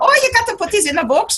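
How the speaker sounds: attempted Irish accent. Retelling what a famed medium said to him: attempted Irish accent. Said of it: "I can't do Irish".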